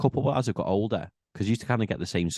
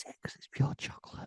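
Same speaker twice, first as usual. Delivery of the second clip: hushed whisper, much quieter. Ranking chocolate bars into tiers in conversation, whispering. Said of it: "Stop whispering".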